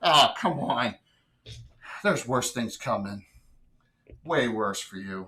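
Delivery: gloating, cackling villain voice. A game master voicing her after the shadows leave, cackling a little. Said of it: "she kind of cackles a little bit".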